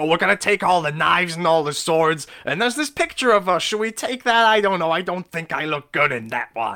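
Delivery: shrill, loud put-on voice. Recounting a film scene about leaving the palace, doing a Gilbert Gottfried impression. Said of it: "I keep doing a Gilbert Gottfried impression".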